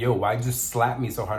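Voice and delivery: ordinary talk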